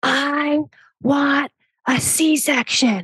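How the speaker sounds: put-on very slow, high, drawn-out scream. Retelling what she screamed in the middle of her birth: imitating someone screaming. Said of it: "And she screamed".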